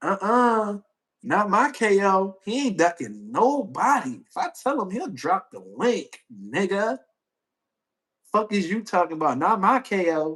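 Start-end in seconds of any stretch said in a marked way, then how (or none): 0.0-7.0 sassy, attitude-heavy tone with drawn-out "uh-uh". Reading someone's words aloud the way he reads them: mock-sassy tone. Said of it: "with a sassy ass tone".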